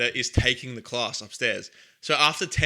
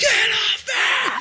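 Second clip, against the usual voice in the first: shrieking, very high, loud scream; 7 dB louder than usual. Retelling being pinned down in a courtyard during class, imitating someone screaming. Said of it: "just screaming".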